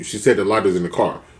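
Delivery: ordinary talk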